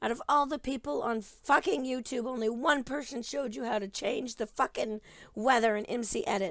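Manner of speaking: mad, fed-up, loud angry yelling at full tilt. Complaining to viewers about searching through tutorial videos, yelling angrily. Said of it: "I'm sorry I'm yelling and I'm sorry I'm mad".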